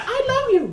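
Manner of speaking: very high, creepy talking-toy voice.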